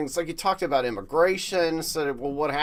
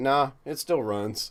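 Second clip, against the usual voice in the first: put-on deadpan delivery. Retelling how Kemp answered Purdue's question in an ad, totally deadpan. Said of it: "like totally deadpan".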